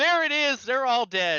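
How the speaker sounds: very high, shrill, frantic, swooping excited scream. Imitating own race broadcast reactions: imitating own excited screaming. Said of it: "me unintelligibly screaming the entire time".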